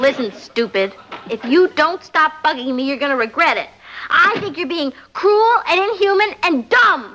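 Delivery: shouting angrily. Yelling at a prank caller on the telephone: yelling into the phone. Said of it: "What's all the yelling about?".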